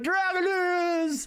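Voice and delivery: very high, thrilled, excited creature voice. Speaker voices a character who is glad to see them, excited Zoidberg voice. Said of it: "He's so excited to see you".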